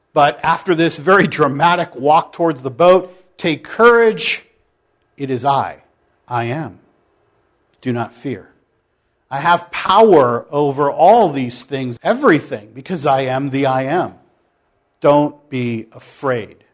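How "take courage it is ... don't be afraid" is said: kind, gentle, compassionate, comforting tone. Acting out Jesus calming frightened disciples on the water: imitating compassionate reassurance. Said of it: "It's kind of a compassionate "don't be afraid,"".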